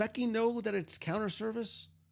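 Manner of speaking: plain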